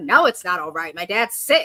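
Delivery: low, sharp, curt mock snap. Retelling how a man answered her concern, the speaker imitates him snapping at her. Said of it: "he kind of snapped at her".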